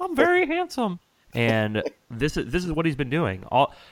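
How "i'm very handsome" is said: put-on squeaky, very high-pitched small boy voice. Imitating a football player as a child: impression of eight-year-old Tom Brady. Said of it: "That's my impression of eight-year-old Tom Brady".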